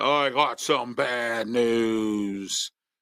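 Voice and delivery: very slow, dragged-out put-on voice. Sharing some bad news, the speaker does a Wade Barrett impression. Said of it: "I'm going to use my Wade Barrett imitation".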